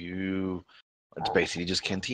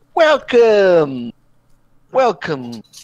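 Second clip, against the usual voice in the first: high, loud slick salesman voice. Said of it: "It's like".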